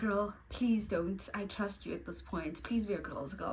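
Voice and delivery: half-whispered, hushed stage whisper. Retelling a friend confiding a secret at a party: imitating Beauty half-whispering. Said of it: "is whispering".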